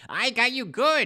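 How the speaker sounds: put-on very high, wheezing goblin cackle. Narrator voicing a spring-loaded goblin popping out of a snuff box, wheezing goblin voice. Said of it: "he wheezes".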